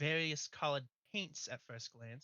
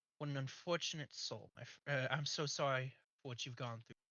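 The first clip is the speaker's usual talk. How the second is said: sad, sorrowful tone. Voicing Henry speaking to a trapped madman: sad. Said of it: "Henry looks at him sadly".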